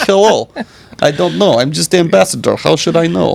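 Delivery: put-on Russian accent. Speaker plays an ambassador who doesn't know, in a Russian accent.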